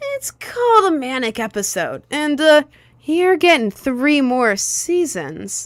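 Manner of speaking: high-pitched, loud cartoon character voice. Joking announcement of three more seasons, in a Deku voice. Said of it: "I have to say it in a Deku voice, so it's clear that I'm joking".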